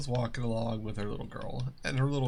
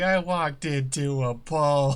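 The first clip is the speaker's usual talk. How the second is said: put-on loud, slow, sobbing little kid's wail; 3 semitones higher, 7 dB louder than usual. Retelling what a child said after walking into a pole: imitating a crying child. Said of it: "crying, going".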